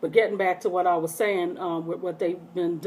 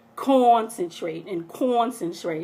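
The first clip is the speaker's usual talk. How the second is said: ordinary talk, nothing marked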